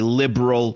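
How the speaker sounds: emphasis on the word liberal. Repeating a point about Nixon being a liberal Republican, stressing liberal. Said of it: "Emphasis on the L".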